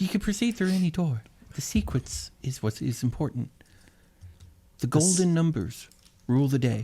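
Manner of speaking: chorus of high, slow fairy half-whispers. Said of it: "a thousand tiny little fairy whispers".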